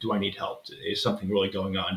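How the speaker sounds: normal talking voice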